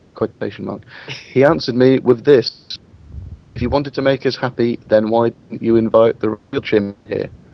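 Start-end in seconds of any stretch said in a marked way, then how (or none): none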